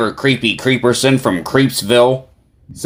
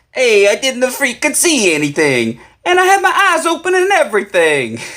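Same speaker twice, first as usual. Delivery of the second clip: put-on heavy Italian accent, swooping pitch; 12 semitones higher than usual. Retelling a story, speaking as Tony after he checks something out, in a Tony voice, thick Italian accent. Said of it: "way thicker Italian accent".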